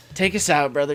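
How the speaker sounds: announcer-style delivery.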